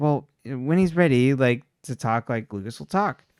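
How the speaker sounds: ordinary delivery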